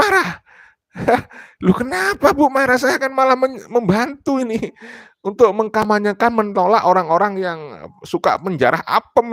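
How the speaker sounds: high, laughing, teasing, mock-innocent tone.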